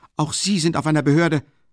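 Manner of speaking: crying out the words, high-pitched. Narrating a man answering an official who told him to be silent, crying out. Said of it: "rief Raskolnikow".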